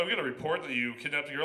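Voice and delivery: ordinary talk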